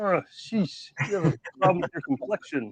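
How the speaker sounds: high, chatty cartoon frog puppet voice. Imagining toy figures talking to each other: Kermit the Frog voice. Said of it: "I wonder what Kermit the Frog would say".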